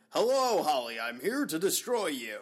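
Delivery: over-the-top cartoon superhero, over-enunciated, very slow, drawn out. Imitating a character's line to holly: over-enunciated cartoon superhero voice. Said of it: "the ridiculous, over-the-top superhero cartoon voice ... here's my best attempt at it ... very over-enunciated".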